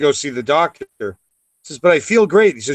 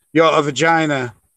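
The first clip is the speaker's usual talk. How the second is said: put-on Yiddish-accented voice.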